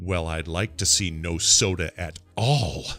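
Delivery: firm, stern, slow delivery. Retelling what she said about drinking soda: imitating a stern reply. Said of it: "She looks at me sternly and says".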